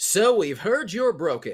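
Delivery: high, slow 1950s narrator voice. Voicing a business's e-learning message, in a fifties voice. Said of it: "in that fifties voice".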